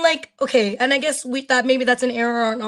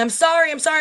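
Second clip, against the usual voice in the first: put-on yelling; 4 semitones higher than usual. Recounting running back with a woman caught on footage, imitating her yelling apology. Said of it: "she's like yelling".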